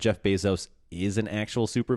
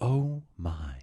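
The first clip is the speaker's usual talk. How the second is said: mock halting theatrical delivery; 2 semitones higher, 3 dB quieter than usual. Retelling a space flight moment: William Shatner voice. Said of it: "just beautiful William Shatner voice".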